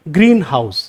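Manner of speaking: greenhouse with stress on green, house unstressed. English word-stress lesson on compound words: stress on green. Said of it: "green जो है वहां हमारा stress होगा".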